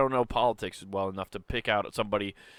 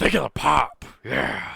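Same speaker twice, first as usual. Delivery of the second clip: put-on gravelly old man voice, louder; 3 semitones higher, 5 dB louder than usual. Joking that Vince McMahon runs the country: Vince McMahon impression. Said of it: "doing a Vince McMahon".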